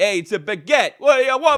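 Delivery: very loud, high, put-on Brooklyn accent. Speaker says baguette the way they say it in brooklyn, in a put-on brooklyn accent. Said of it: "No, you're in Brooklyn".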